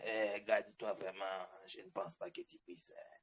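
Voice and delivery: very deep, hushed, cracked, hoarse crime-boss rasp. Giving an imagined big-headed figure a voice, raspy drug-baron voice. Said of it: "il doit avoir une voix cassée. Un peu comme un, un baron de la drogue".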